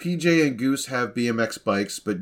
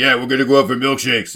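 put-on deep, flat voice, louder; 6 dB louder than usual. Mocking how the blonde kid Goose answers everyone, in Goose's deep flat voice. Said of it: "He's very deep voiced".

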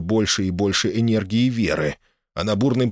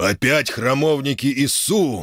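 furious, pitched-up dragon snarl, angry growl; 5 semitones higher than usual. Narrator reads the dragon's line as enemy templars appear, angry growl. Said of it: "гневно прорычал дракон".

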